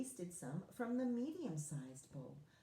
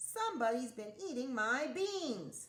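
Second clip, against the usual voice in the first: loud growling voice; 4 semitones higher, 5 dB louder than usual. Reading a story aloud, the bear finds his bowl eaten, growling. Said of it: "he growled when he saw his bowl".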